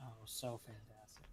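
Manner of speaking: very soft, quiet, sarcastic-sounding tone. Agreeing that the podcast logo is fantastic: sarcastic-sounding. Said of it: "that sounded sarcastic".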